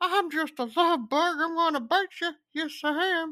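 squeaky, very high, put-on creepy old man voice. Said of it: "sound like ... that pedophile from Family Guy".

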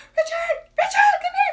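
very high, very loud shrieking scream. Retelling calling a husband from the bedroom: imitating screaming for husband. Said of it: "I started screaming for my husband".

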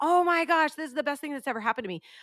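high, loud, rattled-off, over-the-top excited gush.

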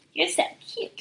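very high, nasal, sugary, slow cutesy drawl. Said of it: "she goes".

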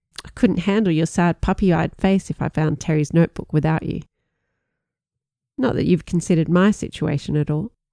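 ordinary delivery

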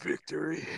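seductive, sultry, alluring tone. Retelling a movie line spoken seductively: imitating a seductive "Victory". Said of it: "said seductively".

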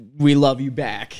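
normal talking voice

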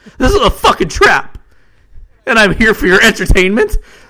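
very high yell with the voice cracking. Narrator reading Stefan facing hundreds of hooded figures, yelling, voice cracking. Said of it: "Stefan yelled, voice cracking".

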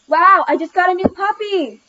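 extremely loud, all-out, high-pitched exclamation. Allie tries the line again after Miss Carey's note, extremely loud. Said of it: "said Allie extremely loud".

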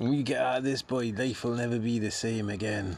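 soft, low-key put-on Scottish accent. Speaker redoes another person's line to check if it sounded Scottish, Scottish accent. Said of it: "Are you sure he's Scottish?".

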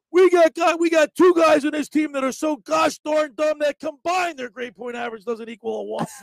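mock yelling voice. Retelling how his coach addressed the team about grades, imitating a yelling coach. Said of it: "he's yelling at us".

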